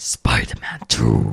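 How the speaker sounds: aggressive announcer voice. Trying the game title again in a cinematic voice: aggressive cinematic voice. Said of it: "it's aggressive".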